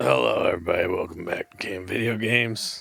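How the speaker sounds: worn-out, haggard, ragged, creaky voice. Co-host greeting the audience at the start of the show, in a haggard voice. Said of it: "I don't know why I sound so haggard".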